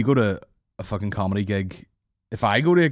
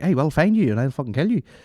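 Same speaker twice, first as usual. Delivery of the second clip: put-on pitched-up Ballymena accent; 6 semitones higher than usual. Retelling a comedian's joke about Liam Neeson keeping his Ballymena accent. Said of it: "imagine if Liam Neeson didn't get rid of his Ballymena accent".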